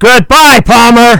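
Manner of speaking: high, loud, carrying shout.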